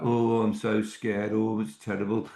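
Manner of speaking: woeful, complaining moan. Imitating a draining person in your life, in a moaning voice. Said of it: "he's got this moaning voice".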